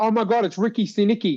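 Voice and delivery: sudden light exclaiming call-out. Retelling wife's reaction while watching WrestleMania: imitating Stephanie yelling. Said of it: "she yelled out".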